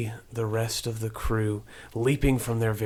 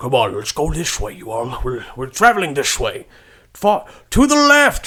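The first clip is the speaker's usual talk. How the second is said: very loud screaming with rising pitch; 3 semitones higher, 10 dB louder than usual. In a game scene, a character yells directions as a thrown stick lands: King Kinsey screaming. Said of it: "he screams as it as it lands".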